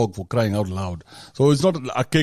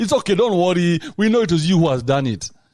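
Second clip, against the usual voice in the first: put-on mocking laughter while speaking; 6 semitones higher than usual. Speaker retells how a woman laughed while blaming her, imitating mocking laughter. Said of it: "she starts laughing to make sure".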